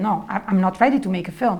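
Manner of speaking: normal talking voice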